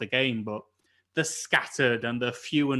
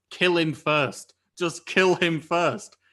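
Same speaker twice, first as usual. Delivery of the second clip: imitated scream, pitched higher; 5 semitones higher than usual. Retelling yelling at a game teammate: imitating screaming at a teammate. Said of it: "I'm just screaming at him".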